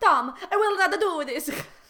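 put-on loud, slow, drawn-out German woman's accent. Reading a character's line aloud in a German accent. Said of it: "A good German woman".

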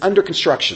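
ordinary talk

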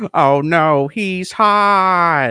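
very slow, drawn-out delivery, hot stretched. Quoting a cartoon scene from memory in Squidward voice. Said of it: "Squidward goes".

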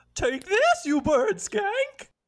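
very high, swooping, sing-song, drawn-out cartoon voice. Recreating the voice of a childhood cartoon hero, Wanda voice. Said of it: "I'm recreating the voice of my childhood hero, Wanda".

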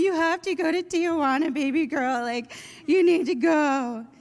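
acted tearful bawling. Retelling what a mom said on the phone: imitating someone bawling. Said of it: "my mom is bawling".

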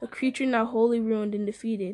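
ordinary delivery

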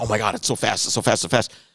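put-on excited gushing, mock enthusiasm. Mocking how everybody reacts to the track's speed: imitating people getting excited. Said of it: "we don't need to get too excited".

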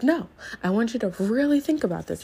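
showy, stagey, theatrical, grand delivery, acted out. Retelling a speaker urging the group to think: imitating a theatrical speaker. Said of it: "he was very theatrical".

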